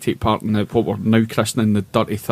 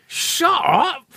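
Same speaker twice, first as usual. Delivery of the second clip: expressive, very high, incredulous disbelieving exclamation. Retelling a story about his partner, imitating her incredulous 'shut up!'. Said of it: "she kept going".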